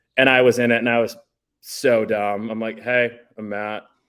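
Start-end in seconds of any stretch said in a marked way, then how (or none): 2.8-3.9 super monotone, completely flat, no inflection at all. Retelling an old MTV interview, acting cool: imitating own super monotone voice. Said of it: "super monotone".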